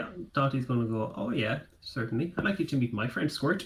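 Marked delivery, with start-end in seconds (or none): none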